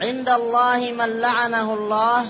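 usual speaking voice

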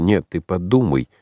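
ordinary delivery, nothing marked

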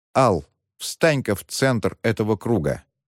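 plain

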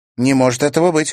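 stated with certainty. Reading a story, Karina answers Timofey's claim with a confident declaration. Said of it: "уверенно заявила Карина".

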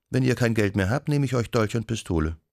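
usual speaking voice

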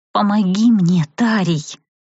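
shaky, trembling, pleading voice. Narrator reads her own line asking a witcher for help: trembling voice. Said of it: "дрожащим голосом попросила я".

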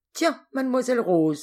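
sardonic, ironic exclamation, very high-pitched and loud. A man calls out to a woman peeking into the hunters' room, exclaiming ironically. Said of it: "s'exclama Judoc ironiquement".

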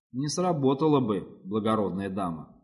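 ordinary delivery, nothing marked

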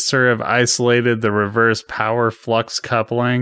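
plain

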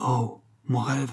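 murmured, shaken. Told of a masked ball, a Bohemian woman recalls her dream, murmured, shaken. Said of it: "murmura la bohémienne, bouleversée".

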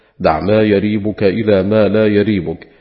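ordinary delivery

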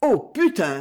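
words slipping out in an involuntary blurt. Livia, unable to hold herself back as she listens: blurted out. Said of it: "lâcha Livia, n'ayant pu se retenir".

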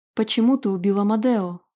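ordinary delivery

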